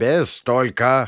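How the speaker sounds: stern, severe, strict. Dinovitser cuts off Albina's hesitation, stern. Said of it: "сурово сказал Диновицер".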